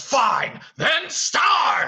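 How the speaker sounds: very loud, very high, shrill, booming furious outburst. Walking through a stage scene, the speaker acts out Beast losing it: mock-angry outburst as Beast. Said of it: "then he really loses it and he goes".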